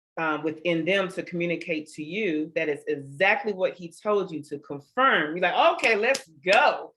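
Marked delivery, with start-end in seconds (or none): 5.7-6.7 slow, higher, louder, drawn-out hyped delivery. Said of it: "I'm getting hyped".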